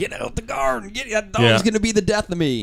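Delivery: put-on very high-pitched, shrill yelling. Retelling Dad yelling at the dog out the window: imitating Dad yelling. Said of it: "Dad's looking out the window yelling".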